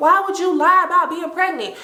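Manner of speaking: acted yelling, high-pitched, calling out at a distance. Retelling a friend chasing a classmate down the hall: imitating someone yelling. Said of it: "Trina is yelling".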